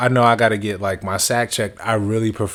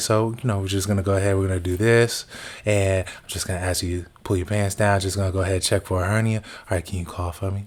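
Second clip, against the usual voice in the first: put-on smooth man's voice, quieter; 4 dB quieter than usual. Retelling his physical, the speaker imitates the man examining him, imitating a smooth voice.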